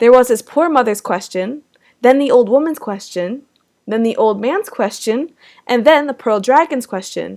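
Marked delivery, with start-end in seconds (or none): none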